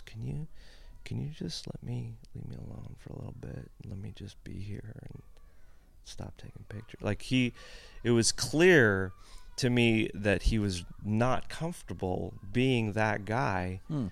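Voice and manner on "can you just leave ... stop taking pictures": much quieter, muttered under the breath. Speaker retells what a man said to a photographer backstage, quietly under his breath. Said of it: "really quietly under his breath".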